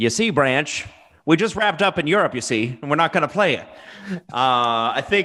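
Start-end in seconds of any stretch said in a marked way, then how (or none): 0.0-3.7 put-on old-timey nineteen-forties voice. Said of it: "nineteen forties voice".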